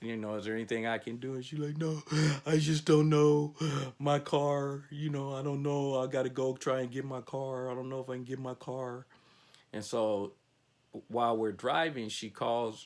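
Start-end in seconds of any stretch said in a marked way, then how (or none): 1.8-9.0 tearful, crying voice, talking through tears. Telling a story about a passenger in distress, quoting her tearful words about her car, imitating someone crying. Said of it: "she's crying".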